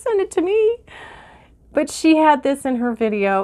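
close to tears. Talking about a woman who shared it in her video, the speaker is tearing up. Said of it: "I'm tearing up".

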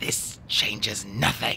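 hissing voice. Stefano hissing at the three children. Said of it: "he hissed at them".

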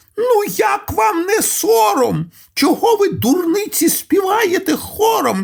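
sudden, very high, scolding shout. Narrator reads a duck's line to the quails and the river, shouting suddenly. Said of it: "і крикнула раптом".

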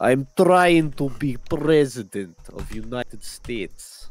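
put-on booming Russian accent, slow and drawn out. Imitating a quote about trying to be president: Arnold Schwarzenegger, Russian-sounding. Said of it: "You're in Russian mode there".

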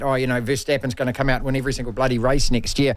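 ordinary talk

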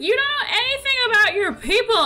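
mock very high-pitched, furious, angry outburst. Retelling a character scolding him about his people: imitating an angry character. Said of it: "she's very angry at him".

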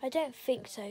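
plain

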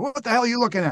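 shouting high and fast.

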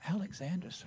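faint, barely-there whisper, scarcely voiced. Retelling a young soldier's reply when asked his name: imitating a faint whisper. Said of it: "with just barely a whisper".

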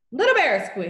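loud, tearful squeak through tears. Patrick, in tears, answering mr. johnson's question, tearful squeak. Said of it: "Patrick squeaked out".

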